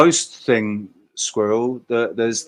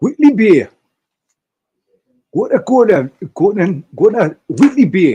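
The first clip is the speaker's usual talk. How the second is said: very loud, pitched-up, put-on Newcastle accent; 9 semitones higher, 9 dB louder than usual. The speaker breaks into a quick demonstration of an accent: Newcastle accent. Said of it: "That's my Newcastle accent".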